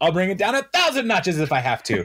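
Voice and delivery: put-on yell, pitched very high. Retelling how someone answered a restaurant owner: imitating someone yelling. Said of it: "And yells it at them".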